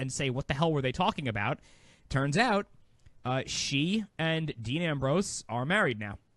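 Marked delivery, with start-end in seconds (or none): none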